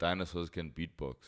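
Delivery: ordinary talk, nothing marked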